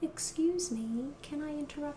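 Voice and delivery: soft, quiet, clear, non-breathy polite voice. Voice lesson on thin folds, demonstrating a quiet, non-breathy polite voice. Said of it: "Thin folds is a quiet, clear sound. It's non-breathy. It's a polite voice".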